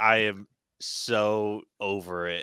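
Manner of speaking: very slow, flat, done-with-it deadpan drone. Retelling how Eddie reacts while Venom tears up the place: imitating a deadpan line.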